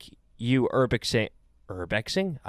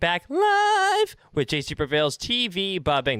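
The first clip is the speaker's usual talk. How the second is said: voice cracking and breaking on drawn-out live; 7 semitones higher than usual. A streamer opens his video with a greeting to viewers: voice cracking. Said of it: "That was a voice crack".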